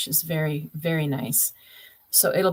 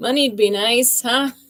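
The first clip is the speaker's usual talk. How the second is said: talking through giggles, pitched-up and loud; 7 semitones higher, 6 dB louder than usual. A tarot reader drawing a card for Cancers, laughing while talking. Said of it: "Sorry, I'm laughing".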